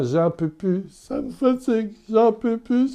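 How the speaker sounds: mock very high-pitched weeping, sobbing through tears. Retelling a patient's words as he wept: imitating a man crying. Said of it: "il recommençait en pleurant".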